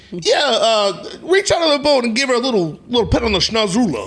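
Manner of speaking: put-on New York accent. Retelling what a man told another guy in a boat, New York voice. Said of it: "he's got like this New York voice".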